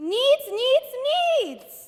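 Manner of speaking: each "needs" hit hard, heavy stress. Pressured to say the word correctly, repeats it: stressing 'needs'. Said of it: "put more emphasis on the word needs".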